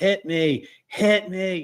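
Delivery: mock slow high cry. Retelling how he towered over her: imitating someone yelling. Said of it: "and he's yelling".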